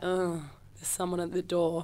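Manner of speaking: reluctant put-upon tone. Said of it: "Positive, negative, and terrified".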